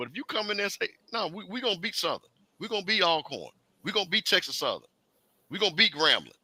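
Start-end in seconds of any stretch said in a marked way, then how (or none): 1.1-6.2 firm, certain, confident, determined tone. Acting out a coach's bold promise of a championship: imitating confident declaration. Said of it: "You can hear it in his voice".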